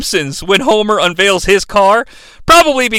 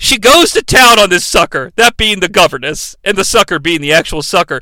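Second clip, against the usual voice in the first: usual speaking voice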